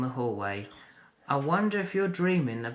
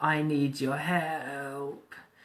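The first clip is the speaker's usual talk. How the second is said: feeble, very slow, "help" drawn out. Reading a story aloud, voicing a caller on the phone: weak voice. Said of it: "a weak voice says".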